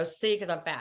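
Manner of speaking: ordinary talk, nothing marked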